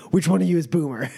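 eager calling out. Retelling a podcast listener who ran up to the hosts, retelling a yell. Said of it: "immediately yelled".

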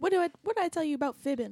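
sassy put-on voice. Retelling how a girl's mother scolded her, in a mom impression. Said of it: "That's my mom impression".

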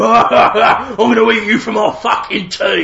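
loud, high-pitched put-on British accent, robotic. Quoting a big robot from a game: imitating a British robot. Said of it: "big robots in it that go".

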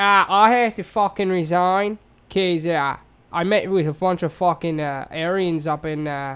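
put-on speaking with a New Zealand accent. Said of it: "I have to say it in a New Zealand accent".

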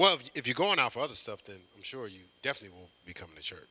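dry, fast, sarcastic aside. Inviting listeners to church on sunday: sarcastic. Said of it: "That was sarcastic".

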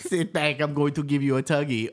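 put-on Hawaiian accent. Acting out a bit offering a tuggy: put-on Hawaiian accent. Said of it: "Was that your accent for a Hawaiian?".

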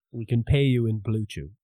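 ordinary talk

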